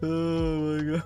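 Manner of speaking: talking through hard laughter. Reacting to a funny edited face: laughing hard while talking. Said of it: "I don't know why I'm laughing so hard at this".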